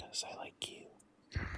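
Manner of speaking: speaking in a whisper. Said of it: "why are you whispering?".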